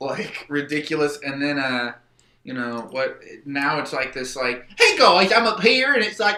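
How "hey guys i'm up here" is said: very loud, high-pitched, shouted country voice. Showing how the character Jaller sounds now: higher, kinda country Jaller voice. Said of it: "kinda country".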